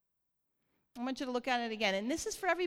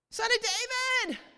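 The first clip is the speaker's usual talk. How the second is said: high, loud pleading yell. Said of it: "they're yelling at him".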